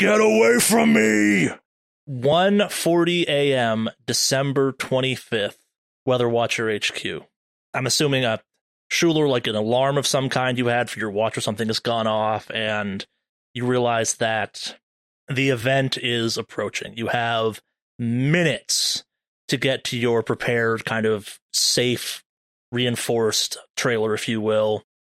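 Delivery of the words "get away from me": high, loud, slow screaming. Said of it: "[name] screaming".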